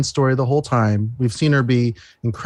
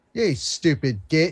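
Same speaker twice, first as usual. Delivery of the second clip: mock British accent, spoken more quietly; 3 semitones higher, 4 dB quieter than usual. Told to do Charlie Cox in his accent, answering: Charlie Cox impression. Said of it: "Go Charlie Cox in your accent".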